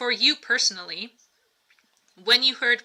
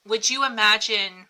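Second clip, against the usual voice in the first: usual speaking voice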